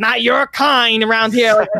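put-on old bigoted man voice. Joking about being turned away at a golf course, imitating an old 1950s racist. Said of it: "they'll say like an old racist from the fucking 50s".

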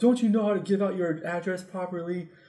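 irritated, sharp, angry yelling. Retelling how a man came and yelled at the speaker, retelling an angry yell. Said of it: "he starts yelling at me".

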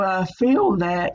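slow voice breaking up mid-phrase. Giving their view on a statement, the speaker's voice is cracking. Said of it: "my voice is cracking".

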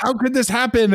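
wild, high-pitched, raving screaming outburst. Retelling someone at a movie screening yelling at the screen: imitating someone screaming. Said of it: "just started screaming at the".

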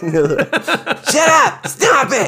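very high, slow, drawn-out, swooping yell. Describing a character who is always yelling at everybody, Hesh yelling in a high voice. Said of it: "he's always yelling at everybody".

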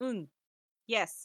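duck squawk that comes out cawing, crow-like. Retelling what Donald says in the game: Donald Duck voice. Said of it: "That sounded more like a crow than a duck".

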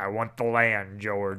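full, menacing evil villain voice. Retelling a character's line about wanting the land: imitating an evil villain. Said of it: "now he just goes full evil and is like".

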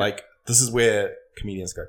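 ordinary talk, nothing marked

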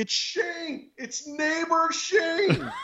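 shrill, stretched-out, drawn-out scream, very high. Retelling calling out to a neighbor over barking dogs: imitating someone screaming. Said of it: "But I'm screaming. I'm like".

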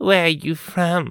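hissing, hostile, barking. Irene questions a new girl in class: hissing. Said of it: "She hissed".

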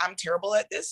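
plain

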